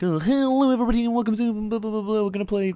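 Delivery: shrill, hyper, rattled off fast, high and loud. Mocking other YouTubers' openings, imitating a fast YouTuber intro. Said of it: "those really fast intros where they talk really fast".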